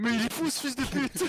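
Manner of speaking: very high, shrill yelled outburst. Recalling a match against Millennium, imitating Chap shouting. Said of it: "en criant".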